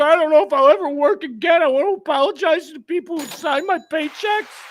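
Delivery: acted-out sniveling, blubbering, high crying whine. Mocking a man who got caught and apologized, imitating him crying. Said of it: "He's crying. He's like".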